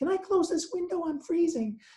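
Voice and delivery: tiny, sugary, sweet little voice, very high. Recounting what a woman at the back of the room said, imitating a sweet little voice. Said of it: "said in a sweet little voice".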